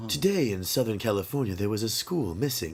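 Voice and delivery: put-on public radio announcer voice. Two hosts joke about what they'd sound like on NPR; NPR voice. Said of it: "If we did NPR, this is what we would sound".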